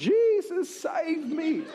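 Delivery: frantic, desperate, very high-pitched scream. Retelling a shark charging straight at them underwater: retelling a scream. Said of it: "underwater screaming out".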